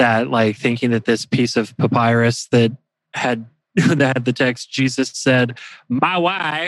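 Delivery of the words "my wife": put-on, high-pitched, comic Eastern European accent. Speaker quoting the text on a papyrus fragment: Borat impersonation. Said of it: "that's my best Borat impersonation".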